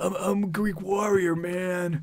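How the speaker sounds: slow, high, dumb-sounding bro, like bad dub. Mocking how a game's male character sounds: imitating a stupid dude voice. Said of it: "But he sounded stupid".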